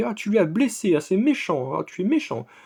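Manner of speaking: high, mock pouting, sulking whine. Retelling how a woman sulked that someone got hurt, imitating her sulking. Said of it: "elle boude, elle fait vraiment".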